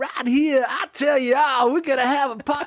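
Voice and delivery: very high, affected, laid-on put-on Southern accent. Telling of a New Yorker whose accent puzzled everyone, imitate him in [name]'s put-on Southern accent. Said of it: "where did this accent come from?".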